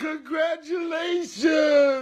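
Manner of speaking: tearful, crying while talking. Saying congratulations in a clip, crying while talking. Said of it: "you can't be crying on my stream".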